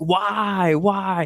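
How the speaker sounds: very high-pitched, stretched-out, drawn-out yell. Recounting the last play of a game, the speaker re-enacts their own yelling. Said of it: "I'm yelling because it's literally the last play".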